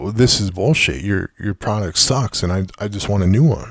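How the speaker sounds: plain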